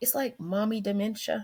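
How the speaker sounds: hushed whisper. Explaining mom brain in conversation, whispering. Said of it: "Why are you whispering?".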